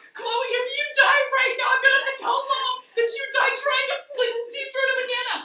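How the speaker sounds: put-on sobbing panic, shrill, very high and loud. Retelling what she said as they both cried on the floor, imitating someone crying while pleading. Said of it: "and she starts crying".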